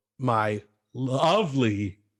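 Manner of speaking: lovely drawn out slow, ovely stressed. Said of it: "Emphasis on it".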